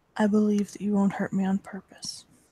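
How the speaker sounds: very quiet, hushed. While gently hugging another character, she speaks very quietly. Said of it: "she's gonna say very quietly".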